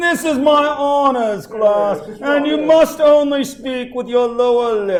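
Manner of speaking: put-on posh English accent. Recalling their old professor's honors class: English accent like old professor. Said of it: "I like to say it with an English accent".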